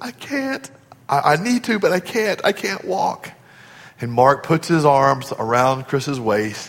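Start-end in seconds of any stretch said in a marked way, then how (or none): 0.0-3.3 mock crying, weeping, pleading voice. Retelling how a man answered an intern offering help, imitating someone weeping. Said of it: "Chris said in his weeping voice".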